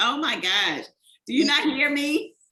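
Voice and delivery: slow, drawn-out, loud yelling. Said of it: "I am yelling at Maya".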